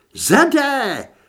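shrill, very loud, very high shriek. Holly calls to the narrator, whose arm a zombie has bitten, screaming. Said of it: "Zaječela Holly".

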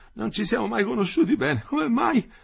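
very high, gasping, rough, rasping panting. A man gritting his teeth in pain speaks to Metello: panting.

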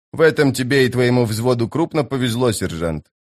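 ordinary delivery, nothing marked

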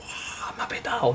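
awed, soft, breathless whisper.

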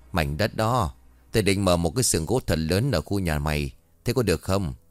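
plain

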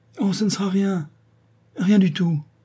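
high-pitched, tremulous, quavering, trembling voice. Answering the marquis as he calls through the door, in a trembling voice. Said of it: "lui répondit-elle d'une voix tremblante".

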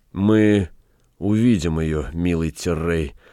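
ordinary delivery

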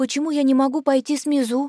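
shy, hesitant, timid, high little voice. Narrator reading Ayash's question to Liluai, timidly asking. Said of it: "робко спрашивает Аяш".

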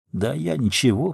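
conciliatory muttering. Andreev answers the other speaker's criticism: muttered conciliatorily. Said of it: "примирительно буркнул Андреев".

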